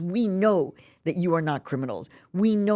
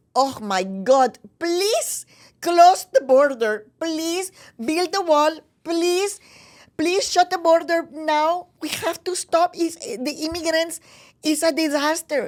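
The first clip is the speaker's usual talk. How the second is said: mock pleading, very high, loud and facetious; 12 semitones higher, 5 dB louder than usual. Mimicking people being interviewed, facetiously imitating interviewees. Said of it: "I'm going to say it like this, kind of facetiously".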